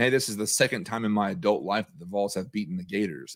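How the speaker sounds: normal talking voice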